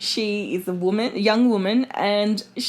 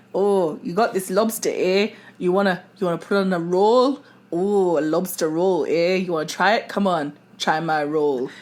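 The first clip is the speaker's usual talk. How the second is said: put-on Newfoundland accent drifting into Jamaican; 3 semitones lower than usual. Imagining someone in Newfoundland pushing bread on people, in a put-on Newfoundland accent. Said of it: "That is a lovely Jamaican accent".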